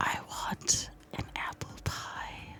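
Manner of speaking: slow, drawn-out whisper, each word deliberate. Testing whether a whisper registers, the speaker tries a line for a co-host: slow whisper. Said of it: "I have to say it slow".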